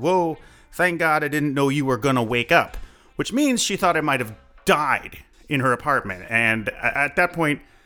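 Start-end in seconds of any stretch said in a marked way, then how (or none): 0.0-2.8 accent from Barbados. Speaker retells waking up panicked and what Kanna said, in Kanna's deep Barbadian accent. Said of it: "in this very deep Barbadian accent".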